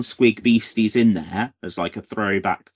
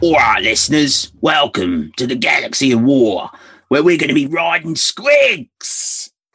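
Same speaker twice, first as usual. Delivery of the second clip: loud put-on Cockney accent; 3 semitones higher, 5 dB louder than usual. Podcast host welcoming listeners to the episode, in an attempted Cockney accent. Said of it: "Was that supposed to be your Cockney accent?".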